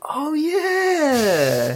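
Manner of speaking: very high, dopey, offhand tone. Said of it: "He's like".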